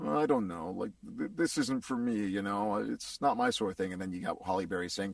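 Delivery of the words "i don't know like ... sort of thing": put-on awkward mumbling. Retelling how a shy character turns down partying: imitating awkward mumbling. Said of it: "get all awkwardly mum-, mumbly".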